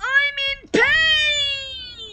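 very high, loud, drawn-out, exaggerated wail of pain.

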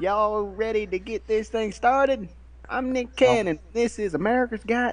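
high, put-on Southern accent with drawl. Introducing a talent show as its host, use a put-on Southern accent. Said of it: "I thought I'd give it my best southern accent".

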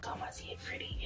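very soft, hushed whisper.

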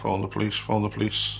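normal talking voice

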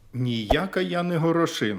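loud, high-pitched, outright declaring tone. A little pea answers a fox's demanding voice, loudly declared. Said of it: "голосно заявила Горошинка".

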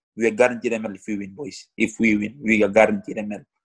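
plain

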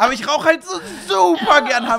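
acted passionate, fervent gushing, very loud and high. Retelling how someone talked about smoking Hanf, mock-fervent, passionate. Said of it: "aber so richtig inbrünstig, so als wäre das so Schnitzel oder so für ihn".

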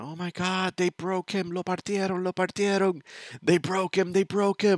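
mock very high shrieking, like a crowd of kids. Retelling how the other kids reacted on seeing the injury: imitating kids screaming. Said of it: "everybody starts screaming".

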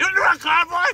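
aggressive, loud, rising taunting shout.

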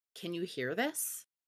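soft, hushed whisper. Casting a message spell to another character, whispering a question: whisper. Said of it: "And I will whisper to her".

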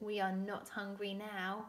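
ordinary delivery

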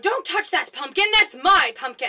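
loud high-pitched yell.

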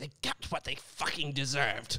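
comic-book villain voice. Asked for the Joker's voice from a film, doing Joker voice. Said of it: "Joaquin Phoenix".

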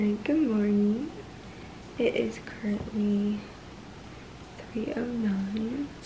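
whispering. Greeting someone very early in the morning, whispering. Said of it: "Sorry, I'm whispering".

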